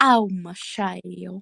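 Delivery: put-on voice like an old-west cowboy. Retelling a voice caught on a recording with a friend, in a cowboy-type voice. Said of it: "one sounded like a cowboy type thing".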